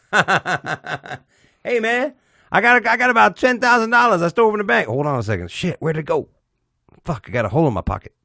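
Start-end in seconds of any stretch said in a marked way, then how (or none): 1.6-7.9 high-pitched caricatured put-on voice.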